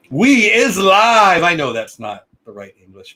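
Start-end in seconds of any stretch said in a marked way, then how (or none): 0.1-1.4 loud, high-pitched yell. Opening a live show, yelling. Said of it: "but I like yelling it".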